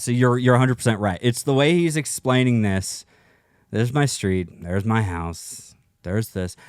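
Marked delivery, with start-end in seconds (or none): 3.7-6.5 mock flat monotone narration, lower and slower. Imitating the way a man explains things: flat monotone narration. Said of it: "He's it's just monotone".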